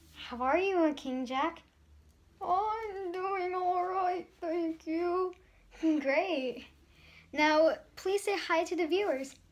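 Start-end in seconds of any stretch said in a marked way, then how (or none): 2.4-5.3 put-on ancient, very old, doddering old man voice. In a sketch, the host greets King Jack, who replies; very old voice. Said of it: "I am very old".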